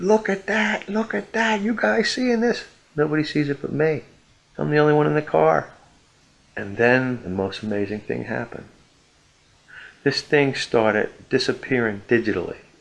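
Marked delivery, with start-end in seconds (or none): 0.0-2.6 acted, very high-pitched, shrill screaming yell. Retelling screaming in the back seat of a car: retelling own screaming. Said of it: "I'm screaming in the back seat".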